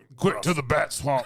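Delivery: high drawled country voice. Joking about how other actors voice Batman: redneck Batman voice. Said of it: "Redneck Batman?".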